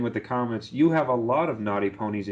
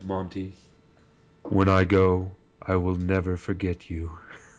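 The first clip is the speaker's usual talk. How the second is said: animated-film creature voice; 3 semitones lower than usual. Acting out a comic the other speaker sent: Lugia voice. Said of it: "I hear the voice of Lugia from Pokemon the movie two thousand".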